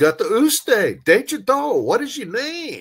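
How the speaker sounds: heightened, high-pitched delivery. Retelling asking the same question a second time, retelling saying it more expressively. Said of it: "So I said it more expressively".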